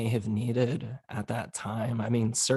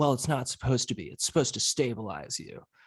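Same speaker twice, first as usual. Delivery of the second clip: mock curt, sharp, quick retort. Retelling what a former therapist said back about hospitalization: imitating a sharp retort. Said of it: "she just shot back at me".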